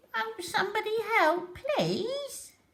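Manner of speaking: very high, croaking small voice. A narrator reads a little frog calling from behind the bushes: croaky little voice. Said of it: "a croaky little voice called".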